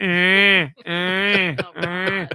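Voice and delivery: high-pitched little penguin chick crying sounds. Imitating a game's baby penguin crying in the car: imitating a crying baby penguin. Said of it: "baby penguin crying the whole time".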